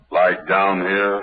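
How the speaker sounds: deep voice. Trying out a voice after being asked to go lower: low voice. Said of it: "Get down lower".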